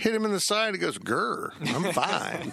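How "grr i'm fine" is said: bulldog voice, starting with a growl. Recounting the bulldog mascot getting hit, the speaker does a bulldog impression. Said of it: "That's my bulldog impression".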